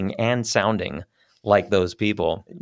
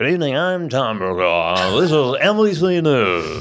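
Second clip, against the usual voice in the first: put-on slow, loud, high, slurred news anchor voice; 5 semitones higher, 5 dB louder than usual. Imitating a news anchor's opening line: Tom Brokaw impression with slurred words. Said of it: "he just never could quite complete a word".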